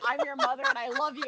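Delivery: argumentative, quarrelsome, combative tone. Retelling how a mother character told her son she loved him: imitating an argumentative tone. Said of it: "in an argumentative tone".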